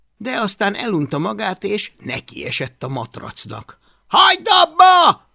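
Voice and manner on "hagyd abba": very loud, shrill, high-pitched shout, abba stretched. A character yells at a creature tearing into a mattress, feathers flying, yelled. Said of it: "ordította Hablaty".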